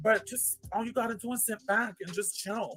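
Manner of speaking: New York accent. Telling the audience to sit back and chill: new york accent. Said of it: "Like my New York accent".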